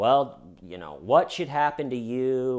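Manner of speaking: ordinary delivery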